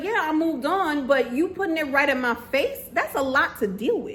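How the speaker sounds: plain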